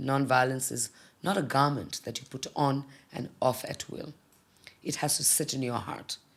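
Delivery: ordinary talk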